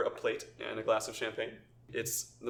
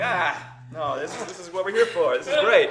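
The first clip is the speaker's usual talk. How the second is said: nonchalant downplaying, higher and louder; 7 semitones higher, 11 dB louder than usual. Voicing Victorio handing over a bag of gold: playing it down casually. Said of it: "trying to play it down like it's chump change".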